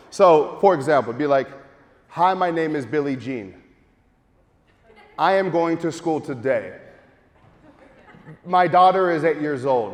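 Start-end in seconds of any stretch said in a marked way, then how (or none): 2.0-9.9 measured delivery, long silent pause after each sentence. Demonstrating how to read a script with pauses between sentences: long pauses between sentences. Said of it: "Notice the pause".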